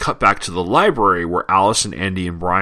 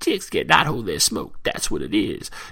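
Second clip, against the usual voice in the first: weird put-on old man voice; 2 semitones higher, 5 dB quieter than usual.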